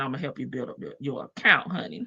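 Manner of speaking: low, soft, purring voice.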